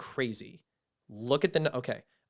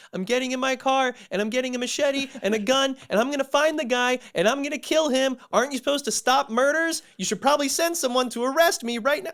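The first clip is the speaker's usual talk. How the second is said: very high, shrill, frantic screaming; 11 semitones higher, 6 dB louder than usual. Retelling his partner's call to the FBI, imitating someone screaming. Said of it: "she starts screaming into the phone going like".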